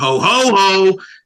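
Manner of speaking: heavy stress given to the middle ho. Describing having an actor say ho ho ho differently: stress on the middle ho. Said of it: "Put the emphasis on the on the middle ho".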